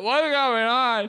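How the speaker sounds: very high, woozy, drooling drugged voice. Retelling a night out, acting out one's drugged past self, acting out being drugged. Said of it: "I've been like roofied up and I'm all like drooling".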